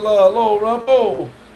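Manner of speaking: ordinary talk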